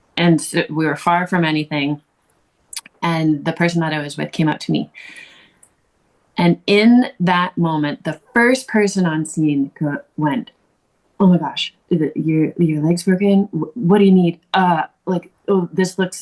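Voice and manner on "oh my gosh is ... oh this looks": put-on hesitant, halting speech. Retelling how the first person on scene reacted: imitating hesitant speech. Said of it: "they had that real hesitation with me".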